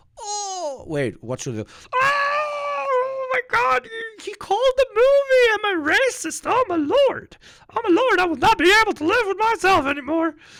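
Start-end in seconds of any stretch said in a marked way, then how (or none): 2.0-10.4 very high, loud, silly puppet voice, drawn-out "oh". Mocking triggered viewers of his film, in a Muppet voice. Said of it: "I sound like the Muppet".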